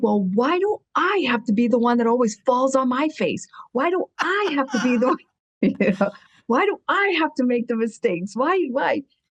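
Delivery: put-on, high-pitched, furious, complaining outburst. Retelling being told she would help other women, retelling own angry outburst. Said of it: "And I got so mad".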